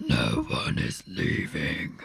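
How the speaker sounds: very deep, low, creaky, rough dark voice. Retelling what Kat heard another voice say: much darker voice. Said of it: "I heard a much darker voice".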